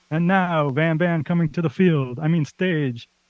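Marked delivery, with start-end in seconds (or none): 0.1-2.2 football stadium PA announcer voice. Describing the football-themed intro they are programming for their show, football announcer voice. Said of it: "found an announcer voice online that's gonna be like".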